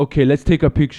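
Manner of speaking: clumsy, bad, butchered Irish accent. Act out a man agreeing to a picture with someone at his table, in a bad irish accent. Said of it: "can't do his fucking Irish accent".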